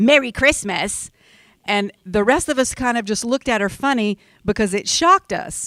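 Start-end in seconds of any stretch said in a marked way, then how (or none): 0.0-1.1 snide, condescending, snarky, talking-down sarcasm. Speaker retelling a seated woman's reply to a holiday greeting, with mock loud, condescending snark. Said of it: "in a very loud, very condescending, uh, sarcastically and snarky voice".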